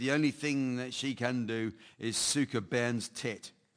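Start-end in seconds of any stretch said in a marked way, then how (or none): none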